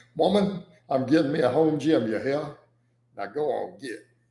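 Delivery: put-on American Southern accent. Reading a message out loud for the audience; put-on southern accent. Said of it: "I did it in a southern accent for y'all".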